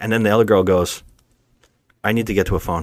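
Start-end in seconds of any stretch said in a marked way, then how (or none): 2.0-2.8 imitated nonchalant, offhand casual delivery. Retelling what the other girl in a scene said, imitating her nonchalance. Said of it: "She says it so nonchalantly".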